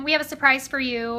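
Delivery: ordinary talk, nothing marked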